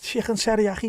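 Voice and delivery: very high-pitched Liverpool Scouse accent. For Scouse pronunciation points, the speaker says chicken teriyaki in a Scouse accent. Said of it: "for the Scouse pronunciation points".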